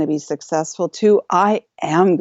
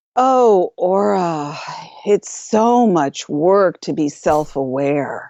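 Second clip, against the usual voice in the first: mock low, very slow exasperated sigh; 4 semitones lower than usual. Telling Jay what someone said, the speaker imitates their exasperated, sighing voice. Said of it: "in an exasperated voice, they literally sighed".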